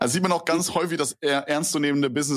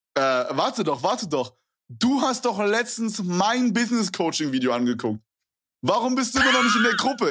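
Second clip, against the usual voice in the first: put-on slight Russian accent, pitched up; 7 semitones higher than usual. Quoting a man pressing him to join his group, slight Russian accent. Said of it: "der hat auch so einen leicht russischen Akzent".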